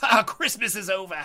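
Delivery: evil cackle running through the words, villain voice. Voicing a whip-wielding boss mid-fight: cackling villain voice. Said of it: "he cackles".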